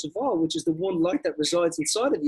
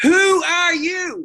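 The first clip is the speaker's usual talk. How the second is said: shrieking scream, very high and very loud; 12 semitones higher, 9 dB louder than usual. Retelling a movie scene, the wizard among flames: imitating a wizard screaming. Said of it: "he's screaming at the little girl".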